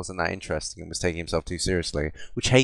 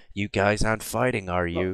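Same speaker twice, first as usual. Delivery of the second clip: put-on awkward voice. Describing how awkward the game character seemed: awkward Connor impression. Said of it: "he'd be like".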